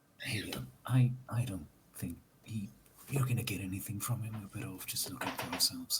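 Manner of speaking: hushed whisper. Role-playing a character who leans in to a father, whispering. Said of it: "lean in and whisper".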